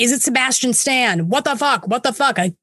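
play-acted, half-screamed mild scream. Recounting their own reaction while watching, retelling their own screaming. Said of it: "I'm like screaming".

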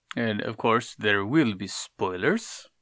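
loud put-on vampire voice. Opening a podcast episode about an animated series, in a Dracula vampire voice. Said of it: "Was that a Dracula impression?".

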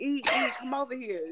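high, loud calling out, yelling. Retelling how a friend called across the salon: imitating him yelling.

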